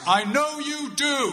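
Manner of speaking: loud, high-pitched calling out. Retelling what the speaker's dad called out as the speaker was leaving, loud voice. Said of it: "in a loud voice".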